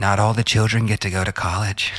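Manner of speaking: put-on deep voice with Australian accent. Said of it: "she's got this great, deep Australian voice".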